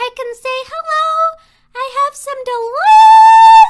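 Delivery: over-the-top shrill voice, very high and very loud. Showing how to answer people at a party: exaggerated extra-high voice. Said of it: "I can emphasize this and talk even higher".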